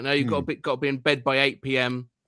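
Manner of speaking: stern, strict voice. Retelling what a really strict mom at a sleepover said: imitating a really strict mom. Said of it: "the kid's mom was just sort of really strict and sort of like".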